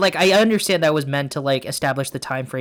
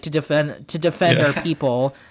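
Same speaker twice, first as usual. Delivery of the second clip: ordinary delivery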